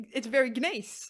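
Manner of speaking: loud speech with giggling and laughing through words. Repeating a phrase with another speaker at the end of an episode, laughing while talking. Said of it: "she's laughing too much".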